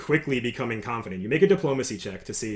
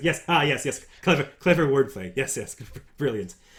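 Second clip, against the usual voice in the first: laughing while talking, higher; 2 semitones higher than usual. A narrator voicing a man who laughs at the listener's joke, laughing while talking. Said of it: "so he laughs".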